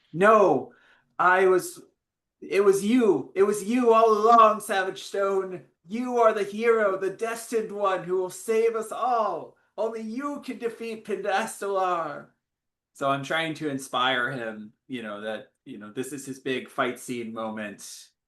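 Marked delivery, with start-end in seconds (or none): 0.1-12.2 very high, inspiring rallying yell, rising upward. Voicing a character yelling up to inspire the hero: yelling up at someone. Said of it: "yelling up at Savage Stone".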